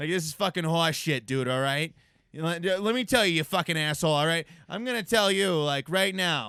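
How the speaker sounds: very loud, full-lunged, put-on Boston accent. Demonstrating swearing in a Boston accent during a group conversation, Boston accent. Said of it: "You gotta like throw your face into it".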